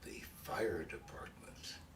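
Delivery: slow, soft, confidential whisper.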